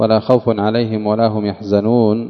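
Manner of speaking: normal talking voice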